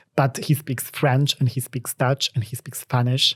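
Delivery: ordinary delivery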